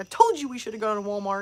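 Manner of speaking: put-on agitated, annoyed complaining voice. Retelling mom complaining in Target: imitating an agitated mom. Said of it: "She's getting agitated".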